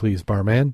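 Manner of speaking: plain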